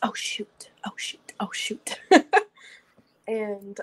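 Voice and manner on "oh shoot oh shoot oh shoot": hushed, whispered mutter under the breath. Figures who came running in clanking, muttered under breath. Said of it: "You just hear under their breaths".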